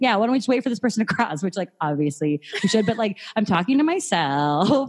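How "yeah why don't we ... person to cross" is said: biting, annoyed, sarcastic jab. Retelling what they say to other drivers in traffic: imitating own sarcastic remark. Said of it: "be a sarcastic asshole to people".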